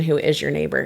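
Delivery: ordinary delivery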